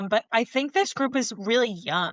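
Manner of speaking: ordinary talk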